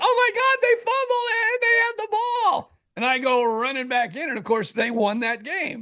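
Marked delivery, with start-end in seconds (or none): 0.0-2.8 mock very high, shrill, shrieking scream. Retelling the wife's reaction to a late fumble: imitating someone screaming. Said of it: "And she screams".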